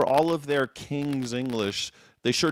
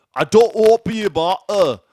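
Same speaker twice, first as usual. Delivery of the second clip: very loud, high, put-on Scottish accent; 8 semitones higher, 10 dB louder than usual. Saying 'martyr' without the T's: put-on Scottish accent. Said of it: "That's why I did the Scottish accent".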